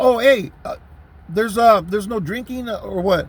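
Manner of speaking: ordinary talk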